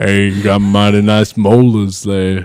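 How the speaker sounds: loud, slow, deliberate voice with careful pacing. Imagining an actor voicing the Tooth Fairy: Ving Rhames impression. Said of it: "That's my Ving Rhames impression".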